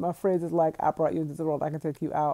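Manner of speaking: ordinary delivery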